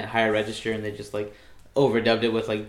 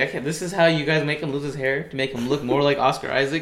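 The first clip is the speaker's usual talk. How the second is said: normal talking voice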